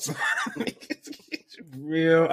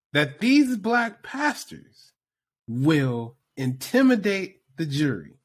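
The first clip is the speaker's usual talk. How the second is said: deliberately slow pace, higher pitch; 3 semitones higher than usual. Repeating a point again after another speaker asks: speaking very slowly. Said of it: "I'm gonna repeat this again to you very, very, very slowly".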